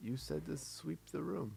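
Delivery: guileless, naive, matter-of-fact delivery. Voicing a character explaining why he searches for a broom: innocent tone. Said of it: "super innocently, he just says".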